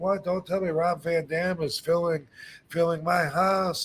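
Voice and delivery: high, excited, gushing voice. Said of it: "he was all excited".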